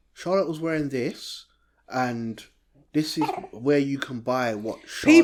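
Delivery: ordinary talk, nothing marked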